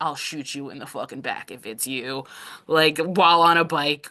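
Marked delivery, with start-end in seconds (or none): 0.0-2.2 soft, murmured whisper under the breath. Retelling a game moment with Wump on a bike: imitating Wump whispering. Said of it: "Wump just whispering".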